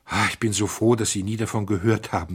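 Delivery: ordinary delivery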